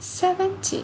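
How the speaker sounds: seventy with the stress on the first syllable, sev. Contrasting seventy with seventeen, stress on first syllable of seventy. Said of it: "Kalau misalnya di puluhan, berarti yang ditekan bagian depan".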